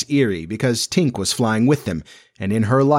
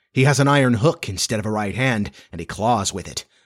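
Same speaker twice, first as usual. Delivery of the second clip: plain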